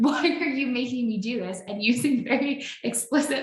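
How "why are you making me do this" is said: mild, half-shouted, exasperated yell. Retelling screaming at him over Zoom during an exposure: retelling own past screaming. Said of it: "I was screaming at him during that time".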